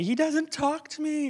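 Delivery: put-on upset little girl voice.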